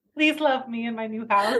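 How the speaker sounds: mock pleading like a sad lost puppy. Mocking a trailing movie character with a put-on sad puppy voice. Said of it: "like a sad, lost puppy".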